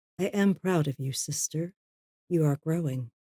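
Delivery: very calm, soft, quiet, reassuring tone. Role-play character hugging Edith and speaking to her: calm and quiet. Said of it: "very calmly and quietly".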